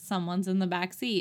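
ordinary talk

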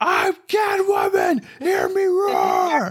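put-on yelling. Joking that Michelle Pfeiffer yelled her lines in the loud suit: imitating Michelle Pfeiffer yelling. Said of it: "She was yelling her lines".

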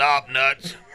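plain

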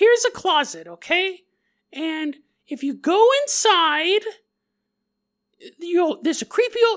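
very high-pitched, mocking cartoon voice. Mocking a ghost tour guide's voice: voice like Rick or Morty. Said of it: "Now she sounds like Rick or Morty".

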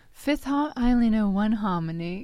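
put-on British accent. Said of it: "She say".

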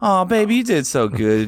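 high, sweet, doting motherly tone. After telling a co-player they sound like her mom, the speaker mimics: imitating mom's voice. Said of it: "You sound like my mom right now".

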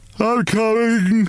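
drowsy, slow, drawn-out, high-pitched wail. The soundest sleeper, woken by battering on the attic door, answers in a slow, sleepy wail. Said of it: "he wailed in a slow, sleepy voice".

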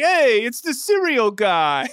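put-on, bad TV-style New York accent. Acting out people recognizing someone on the street, new york accent. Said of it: "And exactly that voice too".

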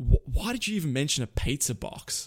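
ordinary talk

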